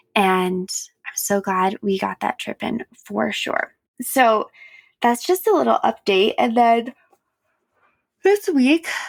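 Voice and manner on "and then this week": words yawned out mid-sentence. Speaker giving listeners a little update, talking through a yawn. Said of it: "sorry, I'm yawning".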